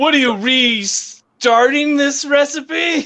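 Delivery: imitated angry chef yelling. Describing a cooking show, imitating Gordon Ramsay yelling at the cooks. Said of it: "Gordon Ramsay yelling at them".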